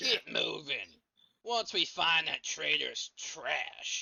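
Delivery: very loud, high, contemptuous, spat-out voice. Narrating a scene, voicing a character giving orders in front of trolls: spitting the words. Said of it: "he spits".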